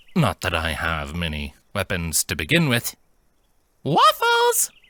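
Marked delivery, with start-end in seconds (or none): 3.9-4.7 shrill, very high, loud barmaid voice. Narrating a fantasy story, a character speaks in a barmaid voice. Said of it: "in the voice of a barmaid".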